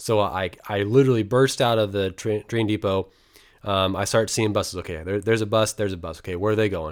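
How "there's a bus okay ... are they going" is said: normal talking voice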